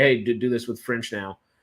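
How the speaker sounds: normal talking voice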